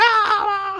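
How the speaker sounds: very high mock scream. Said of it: "they're, like, screaming".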